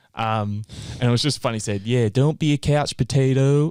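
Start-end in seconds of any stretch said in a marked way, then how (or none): 1.9-3.7 bad, drawn-out put-on American accent. Retelling a line heard translated on the radio, in a bad American accent. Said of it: "in the American accent".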